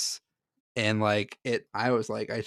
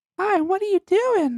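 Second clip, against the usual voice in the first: put-on very high, loud, childlike little girl voice; 8 dB louder than usual. Telling a scary story, the speaker does a little girl impersonation. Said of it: "did you like my little girl impersonation?".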